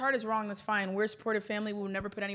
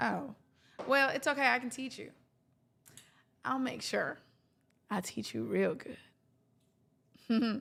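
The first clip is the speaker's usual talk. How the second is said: very slow Texan country accent; 3 semitones higher than usual. Answering viewers asking about accents, switching to a country accent. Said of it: "I'm always gonna have me a country accent".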